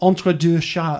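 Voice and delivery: trying hard at a French accent. Naming the title of a book's French edition, trying a French accent. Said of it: "let me try my best French accent".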